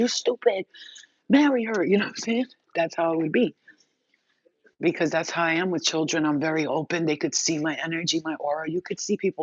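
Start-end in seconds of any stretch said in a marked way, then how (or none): 0.0-1.8 put-on high, drawn-out yelling in children's voices. Acting out how the kids would yell at their dad about you, imitating kids yelling. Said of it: "the kids are yelling at him like".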